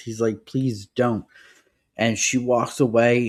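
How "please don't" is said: mock furious pleading tone. Retelling a story where Ben is refused: imitating a furious plea. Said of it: "And Ben is furious".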